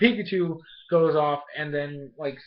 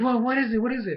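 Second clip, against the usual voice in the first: all excited, eager, high, pestering tone; 8 semitones higher than usual. Retelling a scene, the speaker quotes Bonnie asking Ash, imitating Bonnie, all excited. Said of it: "Like all excited".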